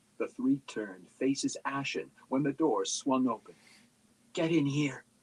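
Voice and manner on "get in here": harsh hissed whisper, higher. Reading a story aloud, a sister pulling a boy inside: harsh whisper. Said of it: "whispered harshly".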